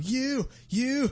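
very high, slow, crying prepubescent voice. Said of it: "it's prepubescent [name] going".

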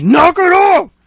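high, loud yell. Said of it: "some guy yelled at me".

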